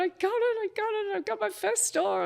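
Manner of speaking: put-on high, weepy, excited tearful crying. Speaker retells calling friends after getting a first store, retelling crying on the phone. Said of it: "I called all my friends and I'm crying".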